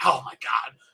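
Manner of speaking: mock annoyed, fed-up, exasperated, mad outburst. Retelling her reaction to going away with the aliens: imitating someone getting mad. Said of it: "She gets so mad".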